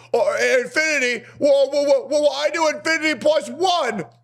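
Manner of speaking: put-on squeaky, very high, slow, drawn-out childish babble. Mocking how a guy argues, imitating a babbling little kid. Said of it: "he babbles like a little kid".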